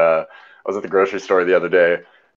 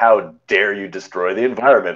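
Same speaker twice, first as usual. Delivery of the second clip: mocking, put-on disdainful tone. Retelling how a customer looked at the plastic bags: imitating a disdainful tone. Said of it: "with disdain".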